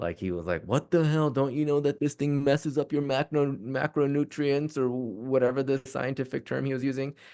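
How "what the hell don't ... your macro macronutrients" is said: yelled, scolding telling-off. Retelling how he reacted to a weekend of cheesecake: imitating someone yelling. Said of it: "And he yelled at me".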